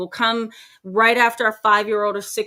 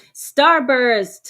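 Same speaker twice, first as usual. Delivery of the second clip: marked vocal tone shift on Starburst; 3 semitones higher, 4 dB louder than usual. Greeting viewers by name, with a changed vocal tone on Starburst. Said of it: "Notice the change in my vocal tone when I say Starburst".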